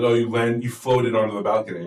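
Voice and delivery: normal talking voice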